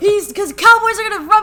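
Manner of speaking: high, loud, gleeful, proud boasting tone.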